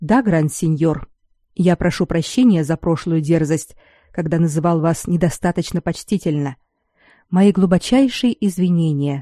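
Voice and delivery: plain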